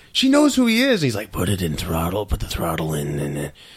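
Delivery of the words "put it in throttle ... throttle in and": voice like a heavy smoker. Retelling a Batman scene with Catwoman: Batman smoker voice. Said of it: "I'm not gonna talk to a smoking voice guy".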